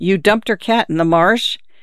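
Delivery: ordinary delivery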